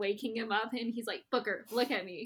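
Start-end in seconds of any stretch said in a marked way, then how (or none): none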